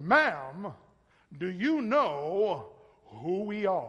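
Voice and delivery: loud, very slow, swooping announcer voice. Speaker retelling a joking companion talking to the lady behind the counter, announcer voice. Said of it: "he had this, like, announcer voice".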